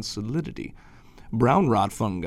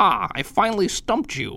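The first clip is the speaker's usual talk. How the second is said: high, victorious, triumphant cry; 9 semitones higher, 3 dB louder than usual. After the narrator admits he can't answer, triumphantly exclaimed. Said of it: "He triumphantly exclaimed".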